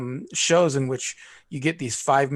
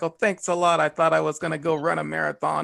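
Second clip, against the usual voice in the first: put-on sarcastic comedian voice; 2 semitones higher than usual. Retelling a comedian's bit to another speaker: sarcastic Dom Irrera impression. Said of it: "he does very sarcastic humor where he's like".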